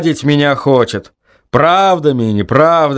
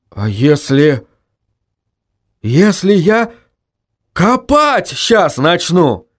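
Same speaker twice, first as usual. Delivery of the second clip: slow, plaintive, pitiful, terrified voice; 3 semitones higher than usual. Ivanka answers a voice from under the ground: terrified, plaintive. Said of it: "Обмирая от ужаса, произносил Иванка. Жалобно так".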